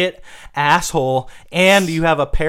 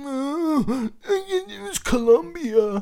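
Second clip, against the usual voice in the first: mocking put-on voice, higher, quieter; 9 semitones higher, 6 dB quieter than usual. Mocking the other speaker for defending Marvel: mocking imitation of the other speaker. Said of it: "that you're like".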